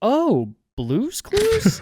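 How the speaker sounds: swooping, lukewarm, unenthusiastic, unimpressed tone. Retelling how a teacher reacted to a cartoon answer: imitating teacher's negative reply. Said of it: "Like that".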